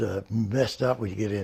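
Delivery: ordinary talk, nothing marked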